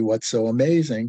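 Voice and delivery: ordinary talk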